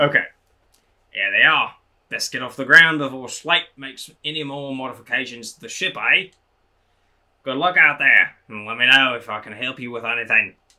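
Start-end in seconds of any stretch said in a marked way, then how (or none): 1.1-10.5 Australian outback accent, attempted but not quite landed. Handing over the launch codes before the ship leaves, in an attempted Crocodile Dundee voice. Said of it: "Trying to do like a Crocodile Dundee".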